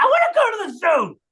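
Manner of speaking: very high, shrill, insistent shout. Retelling what a child shouted at the adults, imitating a shouted demand. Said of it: "literally in this voice, she said".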